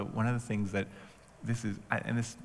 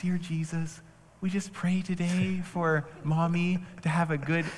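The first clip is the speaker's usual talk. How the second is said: higher, put-on, child-like praying voice; 9 semitones higher, 3 dB louder than usual. Describing how the tone changes when praying with kids, doing that prayer voice. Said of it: "I don't talk like that anywhere else".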